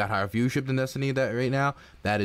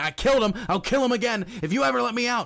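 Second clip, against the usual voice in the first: put-on, very high, shrill yelling outburst; 11 semitones higher than usual. Retelling a cartoon about a lawyer's client: imitating someone yelling. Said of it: "And he's just yelling".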